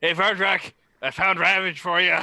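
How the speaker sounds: very high-pitched, very loud shout from afar. Voicing a character calling from the back: shouting from far away. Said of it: "Grimble just shouts from the back".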